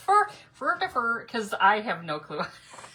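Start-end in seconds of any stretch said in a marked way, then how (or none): 0.0-1.2 careless, pitched-up, made-up Swedish-sounding gibberish. Unsure how to pronounce a phrase, saying it in a Swedish Chef voice. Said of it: "I sound like the Swedish chef from the Muppets".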